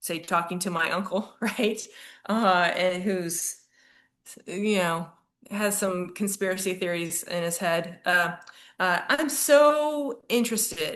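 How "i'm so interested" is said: very high, insincere gushing, drawn-out "so". Showing how to talk to an uncle with conspiracy theories, with fake-sounding interest. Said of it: "that sounded fake".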